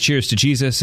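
ordinary delivery

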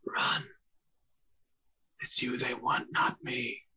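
dry, rasping whisper. Game master voicing the player's brother Vincent, in a cracked, dry, parched whisper. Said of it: "whisper in a cracked and dry, like a parched voice".

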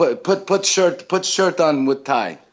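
put-on high, halting, broken-English Italian accent. Retelling what a man told the speaker, in a broken italian accent. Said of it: "he has like this broken Italian accent".

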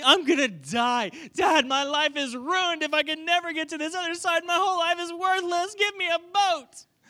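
put-on very high, loud, whiny childish voice. Retelling how a son kept begging his dad for a boat, imitating a whining child. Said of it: "he's whining, he's complaining".

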